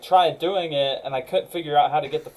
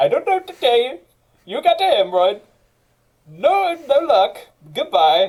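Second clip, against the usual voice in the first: put-on Indian accent, higher pitch; 8 semitones higher, 4 dB louder than usual. Imitating Doctor Butt, a doctor the speaker knows: Indian accent. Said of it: "I can do the accent because I know him".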